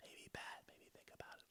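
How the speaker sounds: distant, faint, very quiet whisper. Showing how a fainter rumour sounds: faint put-on whisper. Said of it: "faint whispers are like".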